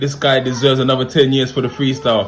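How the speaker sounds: plain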